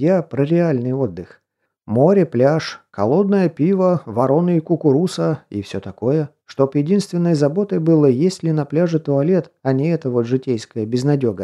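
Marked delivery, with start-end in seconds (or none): none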